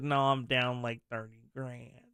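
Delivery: slow, whining drawl, every word stretched. Retelling how a gambling comedian described his losses: Louis's whining, drawn-out voice. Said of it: "Louis had that kind of whining voice like that, and he kinda dragged his words out".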